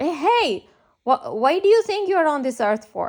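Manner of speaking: loud shout, carrying far. Retelling a man shouting a question across a street: imitating someone shouting. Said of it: "he screamed at us".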